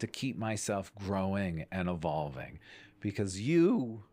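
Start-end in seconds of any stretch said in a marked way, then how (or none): 3.0-3.9 voice cracking and breaking up on the words. Speaker urging listeners to invest in themselves, voice cracking. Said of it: "did you hear my voice crack like a 13-year-old boy".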